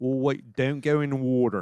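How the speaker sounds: Delaware County accent, flat o's. Explaining how people with the accent talk, then showing it: Delaware accent imitation. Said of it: "you talk like this".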